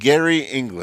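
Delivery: strong put-on, super thick Indian accent. Retelling what a woman said after looking at his hand, in a super thick indian accent. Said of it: "in a super super thick Indian accent".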